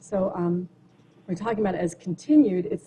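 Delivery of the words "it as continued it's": normal talking voice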